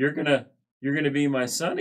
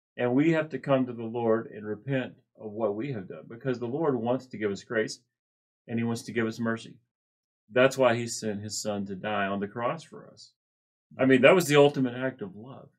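plain

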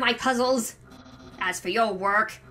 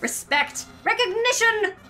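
loud, shouting character voice. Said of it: "he seems like a voice that is very loud".

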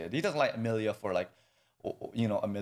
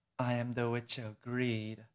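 put-on sexy witch voice, quieter; 4 dB quieter than usual. Acting out how a character was expected to sound: sexy Echidna voice. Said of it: "her voice is gonna be like".

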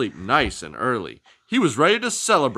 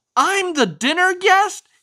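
very high, delighted, joyful outburst; 4 dB louder than usual. Wobble the turkey, hearing he'll be at dinner, exclaims with joy. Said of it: "he exclaimed with joy".

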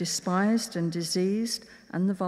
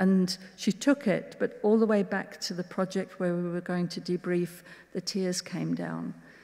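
ordinary talk

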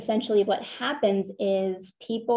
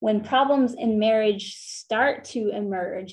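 stress on start, hit slow and firm. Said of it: "I emphasize the word start".

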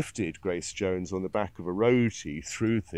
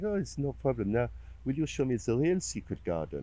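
put-on heavy, slightly seductive French accent, pitched up; 5 semitones higher, 3 dB quieter than usual. Retelling a woman's reply to his thanks for coming: put-on heavy seductive French accent. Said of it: "with a very sort of heavy and slightly seductive French accent".

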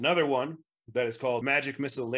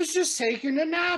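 very high, squeaky little gnome voice; 4 dB louder than usual. Voicing a gnome woken from a bush: gnome character voice. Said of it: "a gnomish fellow comes crawling out of it and goes".

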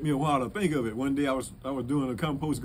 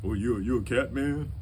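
voice dropped much lower; 2 semitones lower than usual. Acting out what people ask him about the paw prints, in a dropped low voice. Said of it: "they drop their voice and say".

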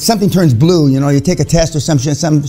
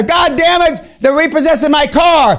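high-pitched, furious screaming rant. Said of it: "he starts screaming at her".

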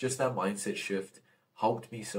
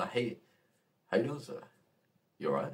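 smiley, cheerful, friendly voice, quieter; 4 dB quieter than usual. Demonstrating how to greet a stranger as if already known, smiley and happy. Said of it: "in a smiley, happy mood".

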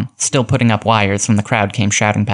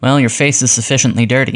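ordinary delivery

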